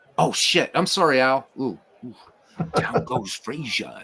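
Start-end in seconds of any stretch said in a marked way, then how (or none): 2.8-4.0 soft, hushed call. Redoing the call quietly, as if not waking sleeping kids: quiet call imitating Al. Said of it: "sounds like he doesn't wanna wake up his kids".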